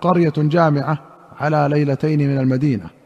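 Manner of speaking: ordinary talk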